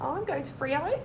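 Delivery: rising tune at the end on "Freo". Describing the rising intonation others use, rising at the end. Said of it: "you go up at the end of the sentences".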